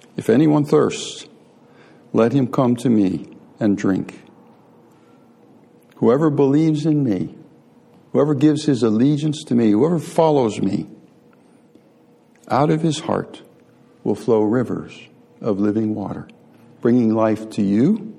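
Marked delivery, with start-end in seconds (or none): none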